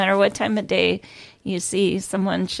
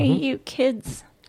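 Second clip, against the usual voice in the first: put-on grumpy, high, cranky old lady voice; 5 semitones higher than usual. Joking that she's now the old lady, the speaker plays one: old lady voice. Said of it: "I'm the old lady".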